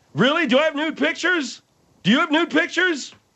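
loud yell. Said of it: "Why are you numbskulls yelling?".

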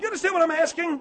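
high-pitched yelling. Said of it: "who are you yelling at?".

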